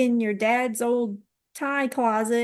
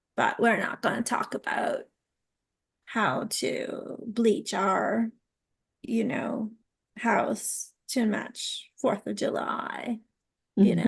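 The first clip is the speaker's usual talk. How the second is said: put-on snotty, snooty, stuck-up voice; 4 dB quieter than usual. Joking about crafts expected on Goop: put-on snotty voice. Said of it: "That's my best snotty voice".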